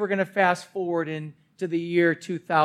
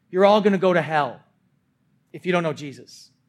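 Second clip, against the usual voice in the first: ordinary talk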